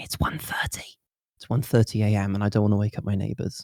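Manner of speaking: soft, low-key whisper. At 1:30 a.m. on stream, not wanting to wake the neighbors, low-key whispering. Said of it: "I'm kind of low-key whispering".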